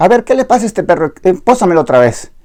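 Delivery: firm, forceful tone. Retelling what the judge said after the dog's bite: imitating a judge's firm voice. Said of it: "me dice con voz firme".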